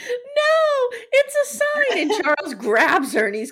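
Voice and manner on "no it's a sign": mock very high, stretched shriek on "no". Retelling a scene where everyone loses their mind, retelling Carolyn's scream. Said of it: "Carolyn starts screaming".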